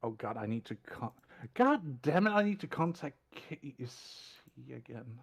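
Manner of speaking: fed-up, unenthusiastic, exasperated, reluctant, with swooping pitch. Saying Casey must be contacted again, unenthusiastic and exasperated. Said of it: "You sound so thrilled".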